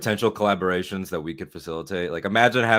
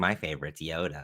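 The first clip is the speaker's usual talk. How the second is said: smug, smart-aleck know-it-all voice; 5 semitones lower, 10 dB quieter than usual. Mocking fans who give smart-ass answers: imitating a smart-ass fan. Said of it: "smart ass people that are like".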